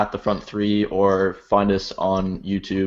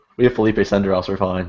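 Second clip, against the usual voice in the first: ordinary delivery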